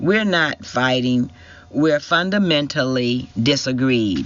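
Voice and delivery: ordinary talk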